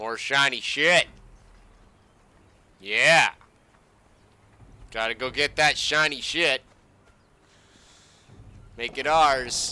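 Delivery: mocking, sarcastic tone. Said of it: "I'm gonna be as sarcastic as fucking possible".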